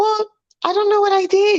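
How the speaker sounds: high, sugary-sweet tone. Imitating the other speaker's reply in a quarrel: imitating someone sounding sweet.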